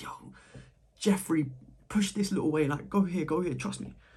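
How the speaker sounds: tiny, small, soft little voice. Voicing the little voice in our head urging you on, small and quiet. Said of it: "it's such a small voice, like it's very quiet".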